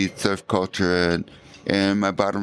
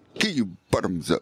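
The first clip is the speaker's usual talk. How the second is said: put-on English accent. Quoting a yoga teacher, imitating an English accent. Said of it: "she had this English accent".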